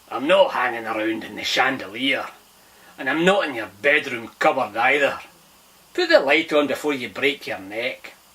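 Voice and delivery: put-on loud voice with a Scottish accent. Reading a story aloud, voicing an unseen speaker addressing Finn, Scottish accent. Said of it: "the voice he had heard had a Scottish accent".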